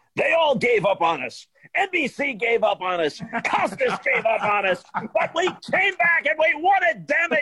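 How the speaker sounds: mock very high, slow, loud, booming, defiant hollering. Retelling what the manager said in the press room: imitating Dallas Green, loud. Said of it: "he was loud".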